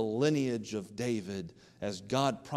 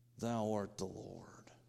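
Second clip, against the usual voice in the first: put-on clenched-teeth voice, much quieter; 8 dB quieter than usual. Speaker acts out what he says when he bows the knee, through clenched teeth. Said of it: "he'll say through clenched teeth".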